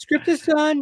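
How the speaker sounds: very high-pitched announcing voice. Imagining an announcement on a podcast that the script is done: high-voiced Matt Reeves impression. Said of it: "I'm trying to do a Matt Reeves 'cause he's got a high voice".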